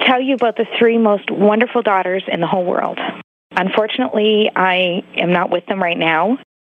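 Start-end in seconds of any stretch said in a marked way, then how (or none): 0.1-3.0 emotional, choking up, hurried. A caller on the D Show speaks to the host, choked up. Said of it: "I'm still getting choked up about it".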